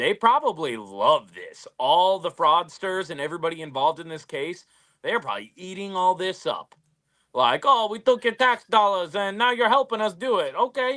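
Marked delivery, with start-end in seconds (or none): 7.6-10.5 put-on Brooklyn-style New York accent. Voicing imagined fraudsters from a news case: Brooklyn accent. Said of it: "That's a Brooklyn".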